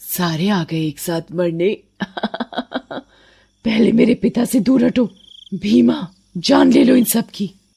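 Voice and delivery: vengeful, menacing witch voice. In a cartoon story, the headless witch confronts the villagers: headless vengeful witch voice. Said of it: "चुड़ैल का सर चुड़ैल के हाथ में होता है। / वो इंसानों से अपना बदला ले रही है और ये चुड़ैल टंकी के चौकीदार की बेटी है। उसे कुछ दिन पहले कुछ दरिंदों ने मार डाला था और उसकी गर्दन काटकर उसकी लाश टंकी में ड".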